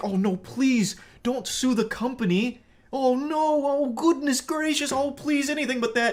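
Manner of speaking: very high, pleading, groveling tone. Mocking a customer's threat to sue the company, acting out mock groveling. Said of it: "Start groveling like".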